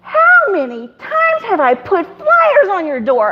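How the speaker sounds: high, slow, amazed tone.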